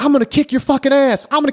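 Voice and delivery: put-on shrill, shrieking, very high screaming. Retelling a man screaming back at him while pedaling away, retelling a scream. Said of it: "he's screaming".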